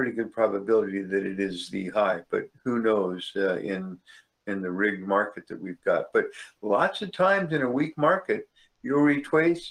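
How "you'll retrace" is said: cartoon hunter voice, r in "retrace" as w. Talking about trading in a weak market, in an Elmer Fudd voice. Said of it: "There's my Elmer Fudd voice".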